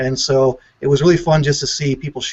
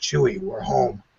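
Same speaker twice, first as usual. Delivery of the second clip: whispered, breathy growl; 3 semitones lower, 5 dB quieter than usual. Recalling a trailer's final seconds, the speaker does a bad Harrison Ford impression. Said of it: "that's my bad impression there".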